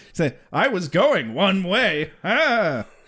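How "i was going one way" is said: bad one-liner comic voice, dragged out. Quoting a one-liner in a terrible Rodney Dangerfield impression. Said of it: "That's a terrible Rodney Dangerfield impression".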